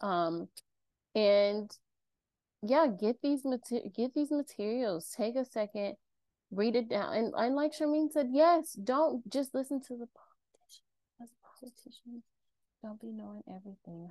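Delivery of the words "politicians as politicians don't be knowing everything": hushed whisper under the breath. Speaker addressing an audience, whispering an aside. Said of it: "I have to whisper that".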